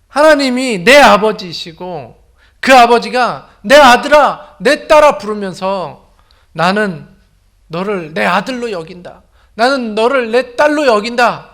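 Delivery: impassioned preaching cry, high, slow, very loud.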